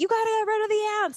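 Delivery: mock shrill, very high, frantic freaking-out yell. Recalling ants infesting the hut in Thailand, yelling at the guy: retelling own panicked yell. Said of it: "Like I was freaking out".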